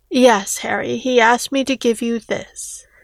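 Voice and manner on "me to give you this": plain reading voice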